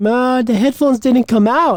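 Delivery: bad, clumsy Indian accent. Retelling a patient's words to a doctor: horrible indian accent. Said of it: "my Indian accent is horrible".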